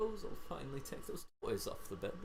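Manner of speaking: muttering under breath. A character mutters to himself as he leaves the dining room. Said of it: "you hear him kind of muttering".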